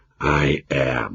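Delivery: soft, weary, defeated, resigned half-whisper. Narrator reads a man's reply to someone behind him, in a resigned half-whisper. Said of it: "in a resigned whisper".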